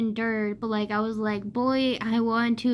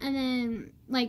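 plain

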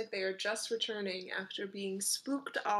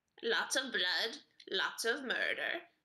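crow creature voice in simple, broken phrases. A game master voices a crow answering a player's questions, talking crow voice. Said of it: "One flutters over to you and starts pecking at the food in your hand".

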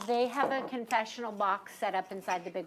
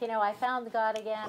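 usual speaking voice

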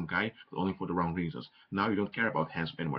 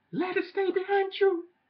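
high raised voice, deliberately sent up, rising; 5 dB louder than usual. Speaker addressing a group as guys, telling them to leave the past: raised high voice. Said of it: "making my voice go so high".

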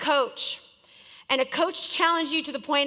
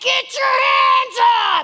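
very high, very loud, shrill screaming; 11 semitones higher, 8 dB louder than usual. Retelling what he kept shouting during defense, imitating him screaming. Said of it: "every time they'd be screaming that".

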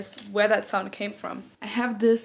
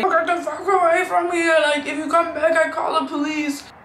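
high, loud screaming outburst; 7 semitones higher, 6 dB louder than usual. Retelling a street scene in Berlin: imitating a guy screaming. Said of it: "there was a guy screaming at a lady".

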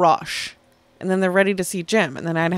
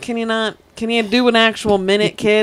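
mock teasing tone, higher and louder; 5 semitones higher, 6 dB louder than usual. Recounting how he teased you at the first show, retelling his ribbing. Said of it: "he ribbed you".

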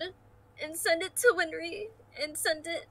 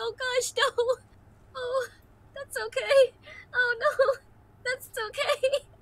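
high, slow, weepy voice, crying a little; 7 semitones higher, 4 dB louder than usual. Voicing a character who cries over a farewell message: crying in character. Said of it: "Kuriyami's gonna cry a little bit".

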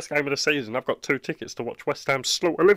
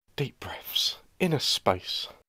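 whispered, breathy mumbling under the breath; 2 semitones lower, 6 dB quieter than usual. Muttering calming words while the other person rants at football, mumbling softly. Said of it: "Can you stop mumbling".

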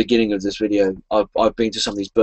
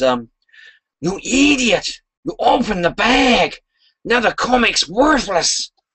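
very high, slow, squeaking, swooping cartoon voice, words stretched; 12 semitones higher than usual. Reading aloud the secret message inside the comic bag, in a Ren Hoek voice. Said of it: "In my best Ren Huich voice".

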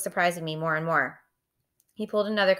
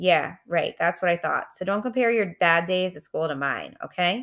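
ordinary delivery

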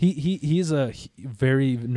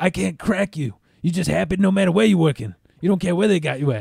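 fast, scratchy, creaky, raspy little voice; 4 semitones higher, 3 dB louder than usual. Retelling what a guy said to him about work, imitating a raspy little voice. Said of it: "He got that little raspy little voice".

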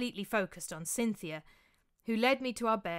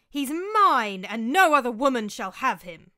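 very loud, full-throated scream, drawn out; 2 semitones higher, 10 dB louder than usual. Narrator reads Cynthia screaming right in Ligdamus's face. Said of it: "screamed Cynthia right in Ligdamus' face".

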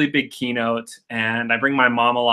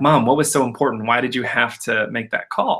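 usual speaking voice

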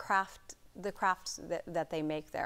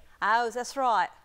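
put-on Cockney accent, higher and louder; 6 semitones higher, 10 dB louder than usual. Trying out accents for another speaker, in a cockney accent. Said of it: "I like Cockney as well".

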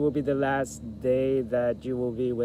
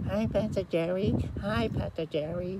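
high, squeaky little cartoon-mouse kid voice; 8 semitones higher than usual. A pastor recalls a sixth grader greeting him before his voice changed: Mickey Mouse-like kid voice. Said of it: "he used to sound like a Mickey Mouse".

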